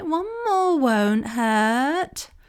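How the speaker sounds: very slow, hurt, drawn-out pleading. Speaker voicing words in a particular voice as a tactic: pleading voice. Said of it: "It's kind of a pleading voice. It's like".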